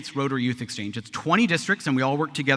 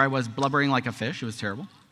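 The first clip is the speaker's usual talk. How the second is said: ordinary delivery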